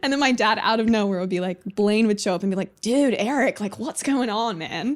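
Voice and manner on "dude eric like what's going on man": slow, laid-back, drawn-out surfer dude voice. Retelling a doll game, voicing the surfer doll: Blaine surfer dude voice. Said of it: "he was, like, a surfer Barbie".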